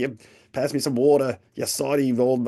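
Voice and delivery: put-on Australian accent, man's voice. Describing how Rod talks, imitating Rod's Australian accent. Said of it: "he's an Australian guy. He talks like".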